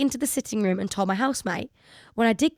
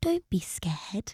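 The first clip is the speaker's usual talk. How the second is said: put-on spooky child ghost voice, quieter; 7 dB quieter than usual. Reading a listener's ghost story aloud, doing the ghost's voice: put-on ghost child voice. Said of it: "I've just added that voice on".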